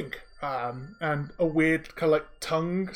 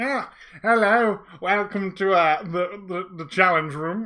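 loud, slow, disembodied magic mouth voice; 3 semitones higher, 5 dB louder than usual. Voicing a magic mouth greeting players entering the room: magic mouth voice. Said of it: "you hear this voice call out there".

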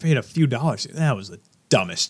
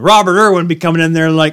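ordinary talk

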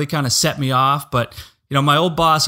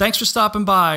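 sarcastic, mocking tone, much higher pitch; 6 semitones higher than usual. Explaining a reply to a hostile comment, said sarcastically. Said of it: "or just something really sarcastic like that".

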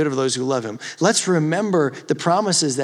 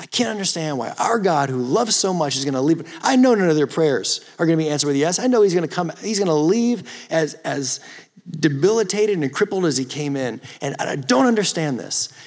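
ordinary delivery

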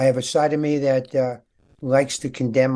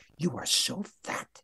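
hushed whisper, close in and slow; 3 semitones higher, 10 dB quieter than usual. Retelling a remark said into one's ear before going on stage: imitating a whisper. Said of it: "he whispers in my ear".

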